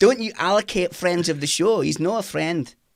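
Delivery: put-on laid-on Scottish accent. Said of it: "That's a brilliant accent".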